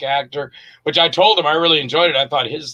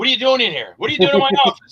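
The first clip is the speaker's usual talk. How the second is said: put-on harsh, tough boss voice, fast, pitched up; 9 semitones higher than usual. Speaker recalls playing a boss behind a desk, imitating a hard-ass boss. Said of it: "really hard ass".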